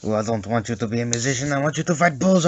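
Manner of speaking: terrible put-on Mexican accent. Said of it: "I apologize for the terrible Mexican accent".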